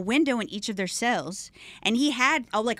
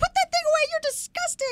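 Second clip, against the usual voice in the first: mock top-of-the-lungs shrill shriek, very high-pitched. Retelling what they screamed while the whole cell block laughed, re-enacting a top-of-lungs scream. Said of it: "screaming this on the top of my lungs".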